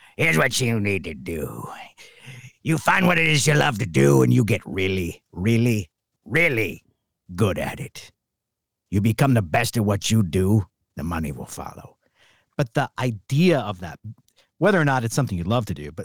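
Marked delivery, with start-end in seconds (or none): 0.2-12.0 put-on funny old coach voice, for laughs. Retelling a coach's money advice to a young man, Mickey from Rocky impression. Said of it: "he did a really funny impression of him".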